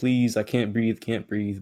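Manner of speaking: put-on crying, tearful pleading tone. Retelling a suspect's plea to a policeman: imitating someone crying. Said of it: "he was crying like".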